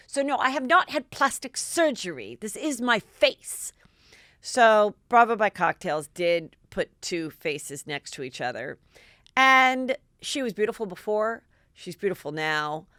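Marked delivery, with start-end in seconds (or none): 0.1-3.7 put-on British accent, higher pitch. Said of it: "I'm gonna do my best [name] accent".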